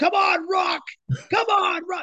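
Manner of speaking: fired-up, passionate, very high-pitched cheering yell. Retelling a man in a video clip urging on his man: imitating passionate yelling. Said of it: "with the passion in his voice".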